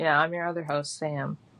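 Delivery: flat, bored-sounding, unenthusiastic. Introducing yourself as the second podcast host: unenthusiastic introduction.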